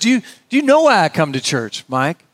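rough, swooping South Carolina accent, badly done. Retelling what a fellow said after church: Hugh Cullen's South Carolina accent. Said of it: "I don't do a South Carolina accent very well".

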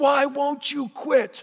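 play-acted very high, drawn-out, in-your-face yell. Retelling a film scene where one character yells in another's face, retelling a yell. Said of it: "he gets up in his face and he yells at him".

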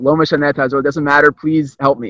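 ordinary delivery

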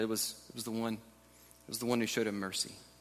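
low, slightly sheepish voice. Retelling the religious expert's answer to Jesus: imitating a low, sheepish reply. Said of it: "it's low and a little bit sheepish".

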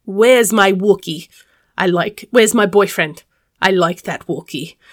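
showy, strutting, performed put-on stage voice. Speaker recalls strutting out to perform as a character, performing a put-on character voice. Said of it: "And I do that voice and perform".

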